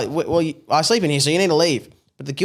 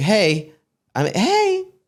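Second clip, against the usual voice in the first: theatrical showman voice, high with swooping pitch; 5 semitones higher than usual. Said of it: "he's like".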